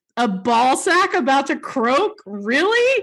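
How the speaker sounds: high, laughing, incredulous disbelief.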